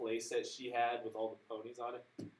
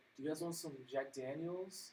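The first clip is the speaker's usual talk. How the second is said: soft, pitched-up half-whisper; 5 semitones higher, 5 dB quieter than usual. A stewardess leans down to two passengers, retelling her half-whisper. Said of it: "she leans down and whispers to me".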